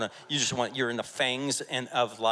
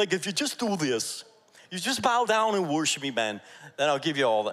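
attempted New Jersey accent, only partly landed; 5 semitones higher, 4 dB louder than usual. Speaker acts out the devil tempting Jesus, in an attempted New Jersey accent. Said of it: "I wish I had like this New Jersey accent".

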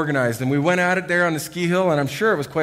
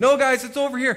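raised, high-pitched shouting; 9 semitones higher than usual. Telling how a split-up group called to each other, quoting one member: retelling a shout. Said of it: "Jonathan was over here shouting".

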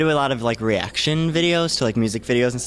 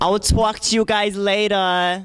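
very high, showy put-on New York or New Jersey accent; 10 semitones higher than usual. Signing off after being asked for new york accents: new york–new jersey accent. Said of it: "Sign out and like your best New York, New Jersey accents".

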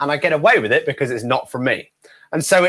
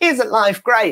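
extra smiley, bright, upbeat, pitched-up cheerful tone; 7 semitones higher than usual. Showing the energy used for the family show: extra smiley and upbeat. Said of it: "you've gotta be a little bit more smiley".

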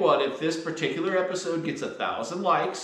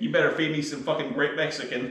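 ordinary talk, nothing marked

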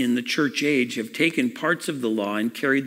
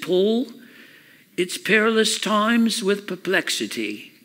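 put-on British accent, raised pitch; 8 semitones higher than usual. Retelling an answer about the times, imitating Leonard Ravenhill's British accent. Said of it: "in his beautiful British accent".

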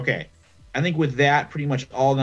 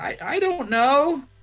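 mock sobbing, much higher. Retelling how the group's messiah answered his followers, imitating someone crying. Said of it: "he just starts like crying".

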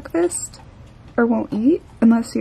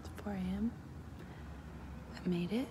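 hushed whisper kept very soft and quiet; 3 semitones lower, 24 dB quieter than usual. Vlogging at 4 a.m. while people are sleeping, whispering. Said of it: "I'm whispering because people are sleeping".

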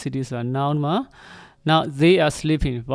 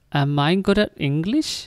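pitch climbing at the end on English; 2 semitones higher than usual. English lesson on questions with be, rising pitch on English. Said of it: "Rising intonation နဲ့ questions တွေကိုရေးပါပြောပါ".

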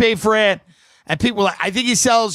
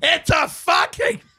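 pitched-up, half-strength screamed outburst; 7 semitones higher than usual. Retelling how Howie covered the phone and screamed at the secretary: imitating Howie screaming. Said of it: "scream at the secretary and go".

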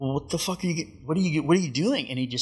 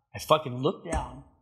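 normal talking voice

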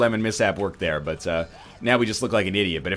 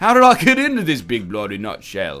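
put-on Australian accent. Joking around mid-game, drifting into a put-on australian accent. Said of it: "now I'm Australian for some reason".

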